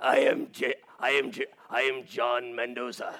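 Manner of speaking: put-on gravelly superhero voice. Joking about another speaker's speaking voice: imitating John sounding like Batman. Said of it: "he sounds like Batman".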